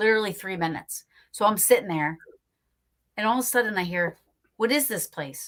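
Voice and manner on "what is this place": mock, strange-sounding woman's voice. Retelling a voice suddenly heard from right behind: imitating a woman saying it loudly. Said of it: "A woman. Loud".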